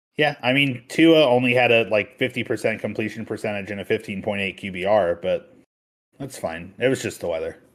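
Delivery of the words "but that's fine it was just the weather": ironic, pretend-reassuring, openly sarcastic tone. Brushing off bad numbers just listed to another speaker: sarcastic. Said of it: "He said with zero sarcasm".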